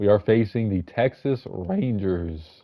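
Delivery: voice cracking. Naming the first-round opponent in a season preview, voice cracking. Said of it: "Ignore my voice crack right there".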